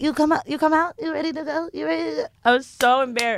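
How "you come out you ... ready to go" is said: put-on high-pitched voice of a small Thai man. Retelling what a man said on walking into the steam room: imitating the Thai man. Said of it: "He's like".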